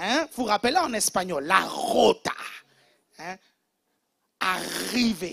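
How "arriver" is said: strongly rolled, throaty r, said louder. Demonstrating how a woman pronounces her R's, strongly rolled throaty R. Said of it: "elle va faire les R comme la rota ... elle va bien gratter au fond de la gorge".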